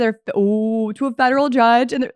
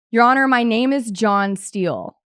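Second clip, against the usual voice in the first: ordinary talk, nothing marked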